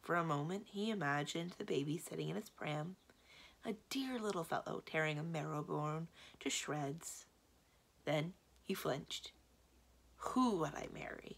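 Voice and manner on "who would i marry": whispered, breathy, miserable mumble. A wizard, urged to have a son, answers: muttering miserably. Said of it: "He muttered miserably".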